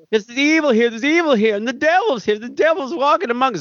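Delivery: fast enthusiastic granddad voice. Retelling a granddad character warning Nancy about evil: imitating Brian Krakow's granddad, enthusiastic and fast. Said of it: "I'm doing it with more enthusiasm than he did and much faster".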